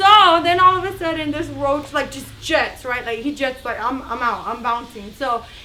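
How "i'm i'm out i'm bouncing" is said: plain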